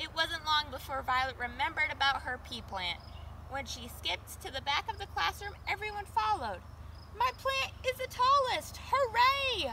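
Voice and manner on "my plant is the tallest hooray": very high, loud, gleeful, happy cheer. At the back of the classroom, a pupil sees her pea plant and exclaims happily. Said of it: "Violet exclaimed happily".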